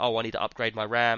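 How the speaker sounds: plain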